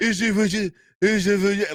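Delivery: poor put-on French accent. Retelling an old wrestling promo, imitating Jean-Paul Levesque's bad French accent. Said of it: "that French accent".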